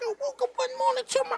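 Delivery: put-on squeaky little-girl voice, very high pitched. Recalling his first time rhyming on the mic, imitating his own squeaky little-girl voice. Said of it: "My voice was all squeaky".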